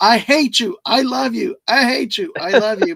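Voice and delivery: play-acted, high, drawn-out, stretched-out scream. Recalling the end of the game when the player hit the shot, retelling own screaming. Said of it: "I'm screaming".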